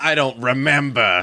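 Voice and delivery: put-on cold, hateful, contemptuous tone. Redoing a movie character's reply to a poker star: imitating a cold, hateful brush-off. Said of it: "He really just hates Johnny Chan in this moment".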